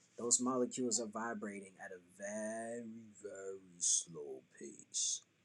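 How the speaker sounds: slowed, drawn-out, warped robot-like voice. Showing that the voice is an instrument, without vocal manipulation: slowed-down warped voice. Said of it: "I slowed down my voice".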